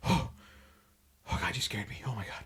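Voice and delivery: mock whispered, breathless, hyperventilating panicked gasps. Retelling a movie scene where a character is startled: imitating someone hyperventilating. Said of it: "almost hyperventilating".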